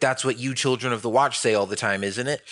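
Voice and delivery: ordinary talk, nothing marked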